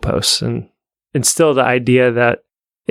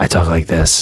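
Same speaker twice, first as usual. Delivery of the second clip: mock grizzled narrator voice, lower pitch; 7 semitones lower than usual. Imitating an audiobook reader: imitating a grizzled old Navy SEAL voice. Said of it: "sounds like how a grizzled old Navy seal should sound".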